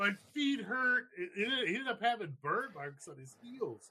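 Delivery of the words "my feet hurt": high, blubbering, tearful bawling sob. Retelling what a crying, burned man said, imitating someone bawling. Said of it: "he's bawling his fucking eyes out".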